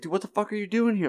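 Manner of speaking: mock, very high-pitched angry outburst. Retelling a cartoon plot, quoting a character: imitating an angry outburst. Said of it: "he gets all angry".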